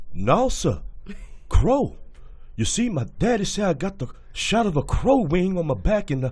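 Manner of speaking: very high, squeaky, loud, belted character voice. Performing a scene from a movie on cue, C.J. Memphis character voice. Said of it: "do the character C J Memphis".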